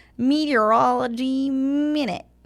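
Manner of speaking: high, laid-on, put-on nerdy voice. Showing how to say a segment title, in a nerdy voice. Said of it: "You have to say it like nerdy".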